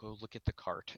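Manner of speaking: secretive, hushed, breathy whisper. Voicing a bookstore worker who comes down and tells the group: whispering. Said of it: "came down and whispered all you guys".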